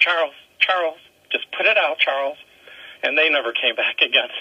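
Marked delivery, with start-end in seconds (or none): 0.0-2.4 mock anxious, coaxing, nervous pleading tone. Retelling a wife urging her husband to put out his cigar, imitating nervous pleading. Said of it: "his wife very nervously went".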